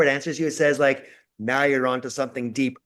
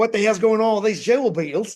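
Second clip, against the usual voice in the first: put-on Australian accent, higher pitched; 7 semitones higher than usual. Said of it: "that was my Australian accent".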